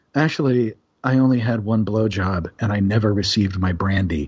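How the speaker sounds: very refined, polished, cultured, well-bred delivery. Retelling what a man said to a stewardess about his check, in a very refined voice. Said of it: "in that very refined voice of his".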